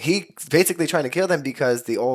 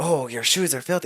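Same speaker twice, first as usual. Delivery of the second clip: clumsy, poor, put-on stage-Irish accent; 2 semitones higher, 3 dB quieter than usual. Retelling how the Leprechaun in the movie talks: Leprechaun voice, bad Irish accent. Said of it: "can't, like, do an Irish accent".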